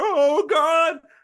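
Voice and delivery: very high, loud terrified scream. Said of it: "soldiers, like, screaming".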